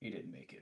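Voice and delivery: sighed-out, hushed, breathy whisper. Voicing a lieutenant who walks out to report a death: sighing to himself. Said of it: "kind of sighing to himself".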